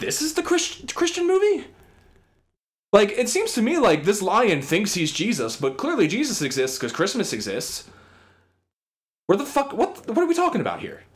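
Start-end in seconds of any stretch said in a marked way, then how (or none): 0.0-1.6 put-on very high, squeaky, prissy, prim little boy voice.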